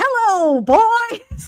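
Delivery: very high, loud voice. Imagining Fozzie Bear about to destroy the aliens: Fozzie Bear voice. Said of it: "imagining Fozzie Bear in the ship about to".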